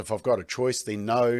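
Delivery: ordinary delivery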